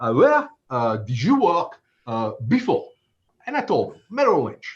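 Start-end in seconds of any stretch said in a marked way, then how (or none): 0.1-2.9 slow put-on French accent. Retelling a job offer, the guy's question in a french accent. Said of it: "I will do my best French accent".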